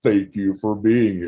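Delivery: low, on-air radio DJ announcer voice. Welcoming listeners while a guest connects her audio, in a radio voice. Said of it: "You get to listen to a radio voice".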